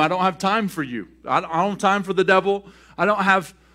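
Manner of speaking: ordinary talk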